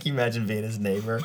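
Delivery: laughing and giggling through the words. Picturing the neighbor of a man blowing a horn at dawn, giggling while talking. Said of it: "I'm giggling".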